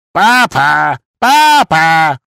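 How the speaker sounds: loud, high-pitched jeering, mocking shout. Pennywise, close to the narrator, echoing her cries: shouting, mocking and mimicking her. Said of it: "Он кричал, кривляясь и передразнивая меня".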